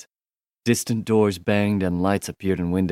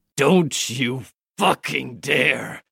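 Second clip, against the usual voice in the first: harsh, rough growl through the words; 6 semitones higher than usual. A narrator reads a man's line to the trio blocking his escape, growling. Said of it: "he growled".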